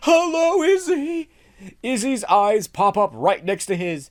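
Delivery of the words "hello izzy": high-pitched, terrified calling out. Reading a script aloud, a character calls into the dark: terrified calling out. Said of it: "Hitch calling, terrified".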